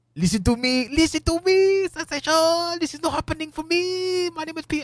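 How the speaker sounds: really bad fake French accent, very high. Speaker imagines having to deal with a fellow wrestler: really bad french accent. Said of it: "That's a really shitty French accent".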